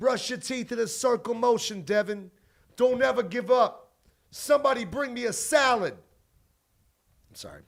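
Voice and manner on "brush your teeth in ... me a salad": loud, high-pitched commercial announcer voice. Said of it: "[name] on a stupid ass commercial".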